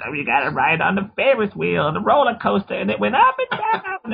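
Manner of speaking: put-on high, very old lady voice. Imitating the old lady from Parenthood as a character's voice comparison. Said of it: "he sounds like the lady from Parenthood".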